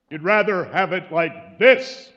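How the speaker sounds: huge, loud, slow booming voice.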